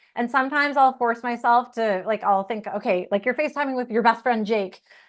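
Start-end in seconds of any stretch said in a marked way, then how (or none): none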